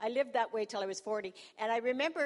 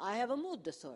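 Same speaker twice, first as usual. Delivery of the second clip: put-on Italian accent. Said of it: "Why am I talking like this? I'm not even Italian".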